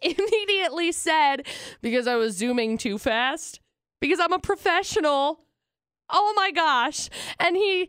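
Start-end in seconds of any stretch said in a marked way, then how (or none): none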